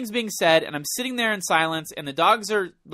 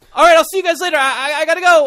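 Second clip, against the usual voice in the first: put-on very high, loud, clumsy and awkward; 11 semitones higher, 9 dB louder than usual. Retelling leaving friends abruptly, retelling an awkward goodbye. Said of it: "in the most awkward way possible".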